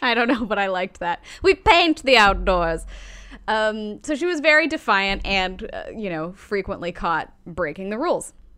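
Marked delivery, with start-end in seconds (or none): 1.4-2.8 loud, slow mock British accent. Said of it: "Why are we British?".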